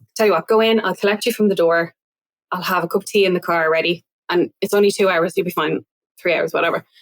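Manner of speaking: ordinary talk, nothing marked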